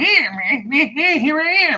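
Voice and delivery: goofy, very high-pitched, slow, drawn-out voice. Describing a goofy guide character type: goofy Jar Jar Binks voice. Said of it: "The goofy, like ... that's Jar Jar Binks".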